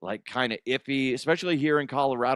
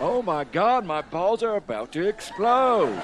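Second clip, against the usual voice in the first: put-on cowboy voice, pitched up; 6 semitones higher, 3 dB louder than usual. Imagining the cast of a made-up sitcom, doing the cowboy in a cowboy voice. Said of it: "And Cowboy".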